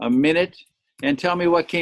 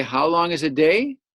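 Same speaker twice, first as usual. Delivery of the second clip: pitch climbing upward on day. Speaker demonstrates question intonation to chinese learners, rising at the end. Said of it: "It goes up at the end".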